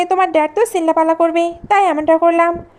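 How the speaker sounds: plain reading voice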